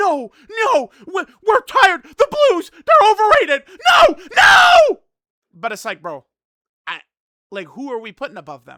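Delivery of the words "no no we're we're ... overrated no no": drawn-out, shrill, swooping, very high and loud freak-out. Imitating upset players reacting to a ranking: imitating fans freaking out. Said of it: "they're gonna freak out".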